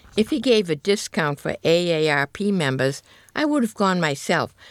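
ordinary delivery

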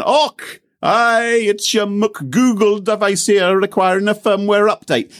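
very high, drawn-out, slow Scottish accent. Discussing different voices for app messages, the speaker demonstrates one: Scottish accent. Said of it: "you could have a Scottish voice".

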